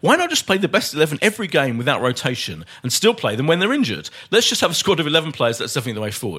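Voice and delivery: plain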